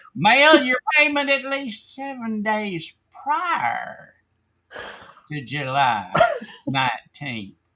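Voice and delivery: put-on creepy, eerie, high sing-song voice. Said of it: "Love your creepy voice".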